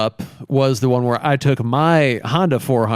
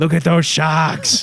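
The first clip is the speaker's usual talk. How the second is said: excited, gushing, unstoppable enthusiastic exclamation; 4 semitones higher than usual. Recalling what the other speaker kept saying, the speaker does an impression, imitating Chad. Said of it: "That was my Chad impersonation".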